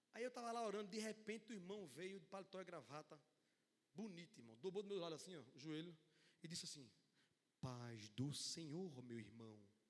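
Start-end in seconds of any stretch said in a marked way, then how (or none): 7.6-9.6 grand eloquent voice, very deep, low, slow, drawn-out. Telling how a brother knelt beside him during prayer, imitating an eloquent voice. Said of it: "com a voz eloquente".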